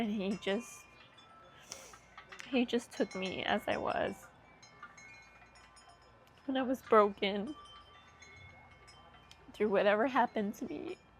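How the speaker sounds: tearful speech, crying through the words. Speaking about one's husband and a hard past, crying. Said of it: "I don't know why I'm crying".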